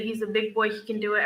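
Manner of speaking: ordinary talk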